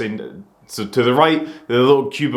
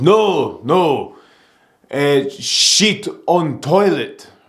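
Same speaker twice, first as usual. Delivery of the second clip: very slow, drawn-out put-on Polish accent. Retelling what a guy at the bar said: imitating a polish accent. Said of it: "he was Polish just based off his accent".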